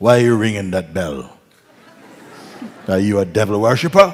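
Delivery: big, booming, loud, strong-voiced man. Retelling a big man on the street confronting him: imitating a very strong voice. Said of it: "a very strong voice".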